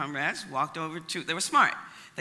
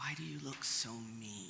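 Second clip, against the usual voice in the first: very soft, hushed half-whisper; 5 semitones lower, 13 dB quieter than usual. Speaker retells what she half-whispered to a policeman in formation: half-whispered. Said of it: "whispered in the policeman's ear".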